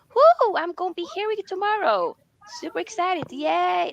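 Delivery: very high, dripping sarcasm with a cheerful tone. Talking about going to work tomorrow after a long stream: very sarcastic. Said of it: "Very, very sarcastic".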